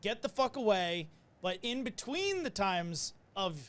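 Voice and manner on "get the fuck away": play-acted yelling. Retelling what a patient yelled at the crew: imitating a patient yelling. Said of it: "they're yelling".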